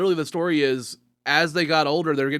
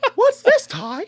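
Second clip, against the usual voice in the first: very high, loud cartoon creature voice; 6 dB louder than usual. Repeating the Agumon line right after it was praised: Agumon voice. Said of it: "I just did a good Agumon".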